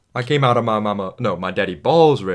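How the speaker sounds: pretty good Cajun-accented delivery. Reviewing film performances, a speaker quotes the role: Gambit Cajun accent. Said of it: "That was a pretty good Cajun accent".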